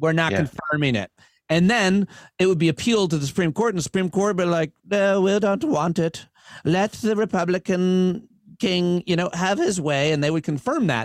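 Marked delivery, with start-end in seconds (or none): 4.9-10.1 poor fake old English accent, slow. Act out the Supreme Court's answer to an election appeal in a bad put-on old Englishman accent. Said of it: "that's a really bad Wisconsin accent".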